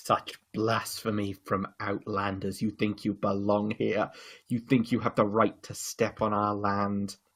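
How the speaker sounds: low, very quiet, soft, venomous menace. An undead lich confronts the adventurers who stopped its cult: Jin'Hwara, peeved lich. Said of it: "The encroaching mists and the crackling sound of freezing reveals the second body of Jin’Hwara the Litch, who’s peeved about our actions in stopping the Kuoza. / with about half of his skull missing a".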